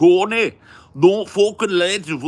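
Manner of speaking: put-on very high, very loud, shrill, booming Scouse accent. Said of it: "Dudes sound like fucking, it's horrible".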